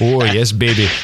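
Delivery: put-on, mock Indian accent. Acting out a bedroom line to show the accent doesn't fit: put-on indian accent. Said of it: "that accent just doesn't fly".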